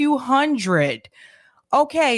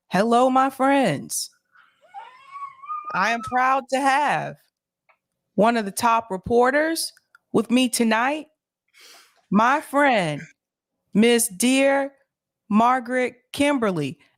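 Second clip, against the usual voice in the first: calm, composed, settled show-host delivery. Imitating how Nick starts off, introducing a reporter; imitating Nick, calm and quiet. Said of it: "Nick will start off real calm and quiet".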